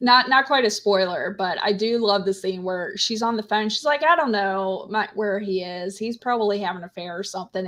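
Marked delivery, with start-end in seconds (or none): none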